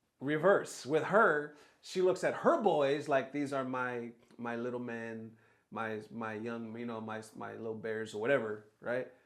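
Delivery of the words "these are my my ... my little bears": ordinary talk, nothing marked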